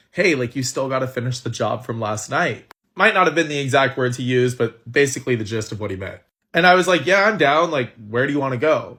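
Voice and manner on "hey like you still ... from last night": put-on whisper, lower in pitch. Retelling what Josh whispered in the speaker's ear in the tent, retelling a whisper. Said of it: "he whispers in my ear".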